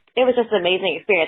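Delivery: choked-up, emotional catch, voice welling with feeling. Sharing a surprise weekend with radio listeners, the speaker gets choked up, emotional. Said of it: "I'm getting choked up thinking about it again".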